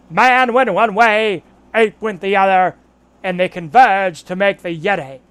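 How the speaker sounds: put-on very loud, booming Boston accent. Trying to do an impression mid-conversation: Ted Kennedy Boston accent. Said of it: "let me try to do the uh, Ted Kennedy".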